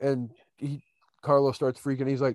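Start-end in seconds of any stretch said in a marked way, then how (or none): none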